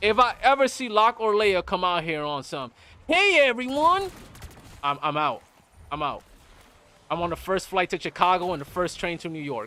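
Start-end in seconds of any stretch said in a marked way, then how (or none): 3.1-4.1 put-on shrill, very high-pitched youtuber voice. Vowing to block anyone's channel who greets viewers in a high-pitched voice. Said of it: "some high pitched voice".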